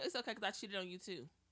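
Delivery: ordinary talk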